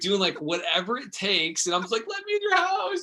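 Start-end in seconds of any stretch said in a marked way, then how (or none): 2.1-3.0 very high, desperate, begging pleading tone. Retelling trying to sell books on hands and knees: imitating own desperate pleading. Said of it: "just desperate".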